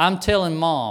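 ordinary talk

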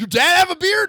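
high, loud yelling.

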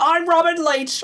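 shrill, very high-pitched, loud yell. Asked if he can do a Robin Leach impression, he answers: yelling Robin Leach impression. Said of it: "I'm yelling, and I don't know why".

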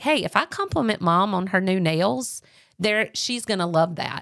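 ordinary delivery

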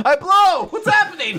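very high yelped shout. Describing a character shouting as he is thrown into the air: imitating a shout. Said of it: "he shouts at as he flies in the air".

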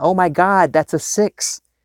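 play-acted high, drawn-out, thrilled, elated joyful scream. Retelling the sister calling on video: imitating someone screaming in happiness. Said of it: "she started screaming".

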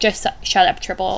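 ordinary talk, nothing marked

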